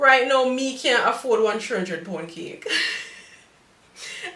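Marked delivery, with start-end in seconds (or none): 0.5-2.7 Jamaican patois, same pitch. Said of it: "I cannot afford a three hundred pound cake".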